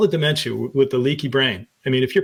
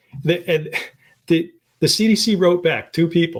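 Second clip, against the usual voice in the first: words breaking into laughter while talking; 4 semitones higher than usual. Speaker telling a story, laughing while talking. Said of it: "I'm sorry, I'm laughing".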